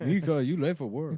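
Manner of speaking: put-on Chinese accent, a sound added after consonants. Retelling how coworkers called out a name: imitating a Chinese accent. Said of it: "like, Chinese accent".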